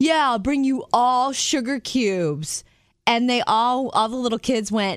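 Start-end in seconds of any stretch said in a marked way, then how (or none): 0.0-2.6 heavy, high-pitched, mocking sarcasm. Retelling the speaker's own past reply to a group of little kids, retelling a sarcastic, mocking reply. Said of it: "I very sarcastically, very mockingly said".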